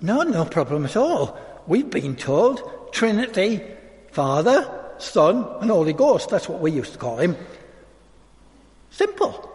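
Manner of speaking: put-on thick, broad Yorkshire accent. Speaker retelling what one of three ladies told them, broad Yorkshire accent. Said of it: "in their broad Yorkshire accent".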